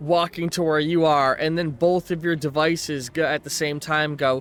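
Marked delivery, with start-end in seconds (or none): none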